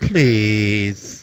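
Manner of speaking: cutesy, sweet voice with menacing venom. Asking a note-taker to hand over paper: cutesy voice with venom. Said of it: "it's a cutesy voice, but there's, like, a bit of venom behind it".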